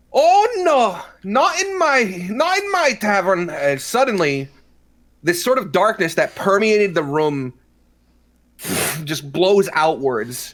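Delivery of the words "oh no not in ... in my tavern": loud, very high, drawn-out cry. A storyteller voices someone calling out as the party takes stances: loud calling out. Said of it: "a loud voice calls out".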